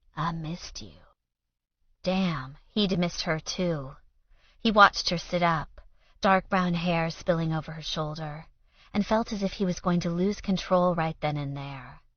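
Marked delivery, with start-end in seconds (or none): 0.2-1.0 soft, throaty, husky voice, quieter. Reading a novel aloud, voicing a woman greeting her partner: soft, throaty voice. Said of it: "she said in a soft, throaty voice".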